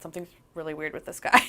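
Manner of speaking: mumbling under breath. Retelling telling Dad on the phone about a weird guy: imitating own mumbling under breath. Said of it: "mumbled it under my breath".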